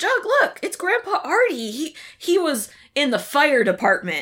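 high, excited character voice. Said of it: "And he's like".

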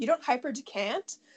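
imitated condescending tone. Recounting a scene, quoting him talking down to Shiv, mock-condescending.

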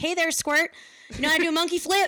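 put-on very loud, high-pitched, belted Kentucky accent. Retelling what a wrestler said at a first match: imitating a wrestler. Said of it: "the perfect voice for that".

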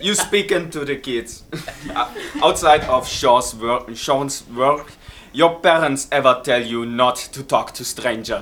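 put-on Italian-accented delivery. Speaker reads the next question aloud, in an Italian accent. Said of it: "so an Italian accent".

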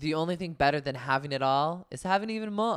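attempted, put-on Bosnian accent. Going through impressions one by one, attempting a Diana Jenkins impression. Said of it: "you can't do a Bosnian accent".

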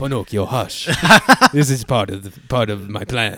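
acted elderly Italian craftsman voice. Joking about a Pinocchio story, answering as Geppetto; Geppetto voice. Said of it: "You have a good Geppetto voice".

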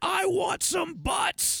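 play-acted shrill, very high, stretched-out scream. Retelling a movie scene where a commanding officer screams: imitating someone screaming. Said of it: "he just screams out yelling".

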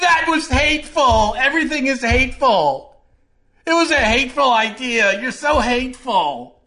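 very high, petulant, foot-stomping whine. Mocking how people argue in debates: mocking impression of debaters. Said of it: "That's my impression of like 50% of the country in a debate".

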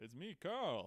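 bad high cartoon voice. Showing a co-host a terrible impression: Carl from The Simpsons voice. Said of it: "I was doing Carl from The Simpsons".

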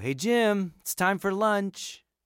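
calling out.

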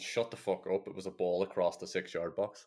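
plain

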